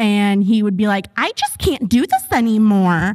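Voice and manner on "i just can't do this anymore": put-on mocking tone. Acting out a man mocking a woman by repeating her words, mocking imitation of her.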